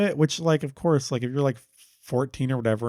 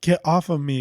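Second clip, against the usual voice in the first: mock yelling, slower; 2 semitones higher than usual. Describing a scene where the listener yells at a guy, retelling a yell. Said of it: "like you're kind of like yelling at him".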